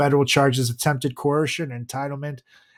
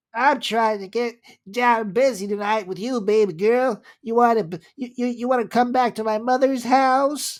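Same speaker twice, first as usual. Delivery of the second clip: high, creepy, stammering weirdo voice; 9 semitones higher than usual. Describing a weird guy chasing a girl online, imitating a weird guy's voice. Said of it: "He talks like".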